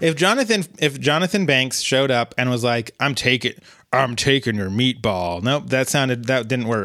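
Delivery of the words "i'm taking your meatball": put-on angry, lazy grumble. Speaker imagines Jonathan Banks showing up, doing an angry-lazy Jonathan Banks impression. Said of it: "both angry and lazy at the same".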